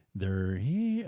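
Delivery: put-on creepy, scary little-girl voice. Retelling a scene from Poltergeist: imitating a creepy little girl. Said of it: "it was the scariest damn thing".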